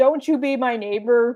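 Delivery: ordinary delivery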